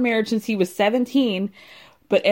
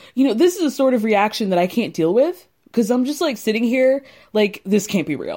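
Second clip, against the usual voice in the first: ordinary talk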